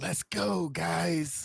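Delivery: loud, high-pitched whisper that carries too far. While the group tries to stay quiet, speaking in a loud whisper. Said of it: "I just whisper a little bit too loudly".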